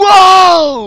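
loud excited whoa.

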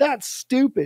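mimicked angry tone. Retelling a market owner dismissing the water bottles: imitating an angry person. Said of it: "And she got all pissed".

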